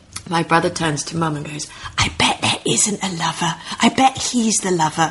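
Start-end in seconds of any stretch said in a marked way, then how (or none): 1.9-5.1 loud theatrical whisper. Retelling the brother's remark to mum during the speaker's play: retelling a loud whisper. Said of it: "in a loud whisper".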